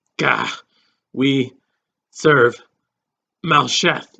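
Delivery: slow, strange, halting, growling beast voice. Reading a story aloud, voicing the beast under questioning, strange growling halting voice. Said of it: "the beast said in a strange, growling, halting voice".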